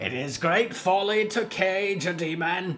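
high, croaking, demonic raven voice. Narrator reading a caged bird's line, croaking bird voice. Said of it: "the bird croaked".

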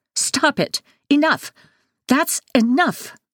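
piercing, shrill, very high outburst. Backhanded across the face, the narrator jumps up and spins on him: shrill. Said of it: "my voice shrill".

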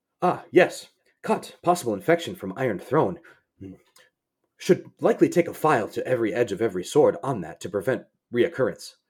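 cheerful, businesslike, upbeat professional doctor voice. Describing a game companion's speech patterns: Mordin impression. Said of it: "what's a good Morden impression?".

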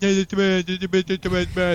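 loud, high-pitched fake deaf voice. Retelling pretending to be deaf to a security guard: imitating a deaf person's voice. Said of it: "I did the voice and everything".

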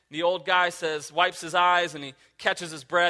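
ordinary talk

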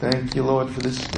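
quiet muttering under breath. Retelling a mover praying while walking around the house: imitating someone under his breath. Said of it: "he's under his breath going".

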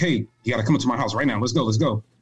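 fast, really excited, hurried delivery. Retelling a buddy urging him over to his house: imitating an excited friend. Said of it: "real excited".

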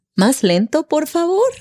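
rising question-like tune on favor. Practicing how to ask someone to speak slower, question-like rise on favor. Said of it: "Así como si fuera una pregunta".

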